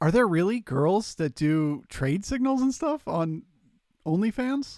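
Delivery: genuinely astonished tone. Asking a question out loud; surprised voice. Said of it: "I'm saying it with a surprised voice".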